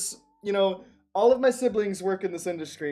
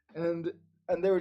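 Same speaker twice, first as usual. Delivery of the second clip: normal talking voice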